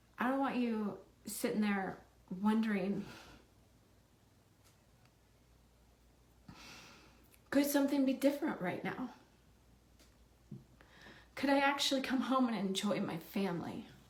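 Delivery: crying while speaking, tearful. Speaker tells a listener they hurt for what they're going through, crying while speaking. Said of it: "I'm sorry that I'm crying".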